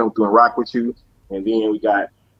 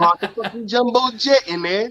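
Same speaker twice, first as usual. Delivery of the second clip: mocking put-on British accent, higher; 12 semitones higher, 3 dB quieter than usual. Making fun of a friend's way of talking: imitating Savage's British accent. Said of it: "perfect my British accent so I can come back and make fun of Savage".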